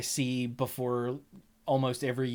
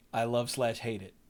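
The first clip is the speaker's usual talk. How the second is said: ordinary talk, nothing marked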